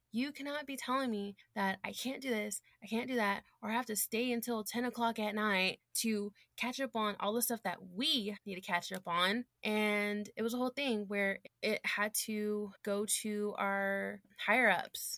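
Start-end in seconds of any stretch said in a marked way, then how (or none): 0.1-9.1 put-on angry, furious rant. Retelling going off on a coworker: retelling going off on someone. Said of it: "went off on her".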